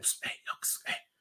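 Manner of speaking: very quiet, breathy whisper with barely any voice. Retelling how a guy got a friend's attention: imitating someone whispering. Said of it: "whispering this".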